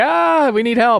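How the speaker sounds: very high, drawn-out, called-out yell. Retelling how the mage yelled out the window: retelling a mage's yell for help. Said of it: "he's yelling out the window like".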